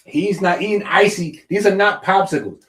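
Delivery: high-pitched, loud yelling. Retelling own comments in the chat, imitating own yelling. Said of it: "I'm in the chat and I'm yelling".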